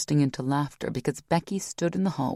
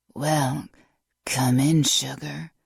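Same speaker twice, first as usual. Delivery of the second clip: put-on raspy smoker's voice, very slow. Reading a story: a character greets visitors, fake raspy smoker's voice. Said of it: "rasped in her fake smoker's voice".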